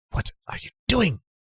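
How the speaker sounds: very high whisper. Game master voicing a woman speaking to her reflection in the kitchen window, whispering. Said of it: "she whispers to her reflection".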